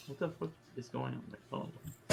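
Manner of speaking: low, soft mumble under the breath.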